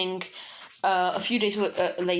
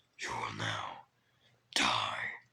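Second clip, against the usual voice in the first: very low, deep, menacing, hushed gravelly rasp; 9 dB quieter than usual. Narrating a fight, the speaker voices Izuku's line in a deep, menacing Batman-style voice. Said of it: "like in a really deep and menacing voice".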